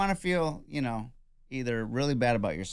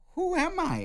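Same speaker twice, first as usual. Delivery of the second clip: high, squeaky, incredulous self-doubt. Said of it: "you're like".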